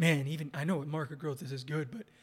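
ordinary delivery

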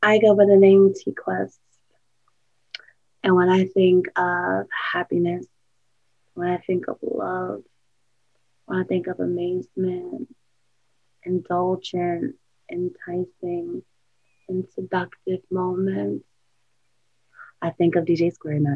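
sultry, sensual, very hushed and quiet delivery. Asked by the host for a live drop, speaker delivers it in a sensual voice. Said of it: "my voice is very sensual".

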